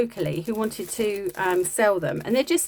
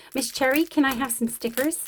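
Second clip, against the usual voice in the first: terrible put-on Canadian child's accent; 4 semitones higher than usual. Quoting a little canadian boy from class, in a terrible canadian child accent. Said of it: "I said that like a Canadian ... a little Canadian boy".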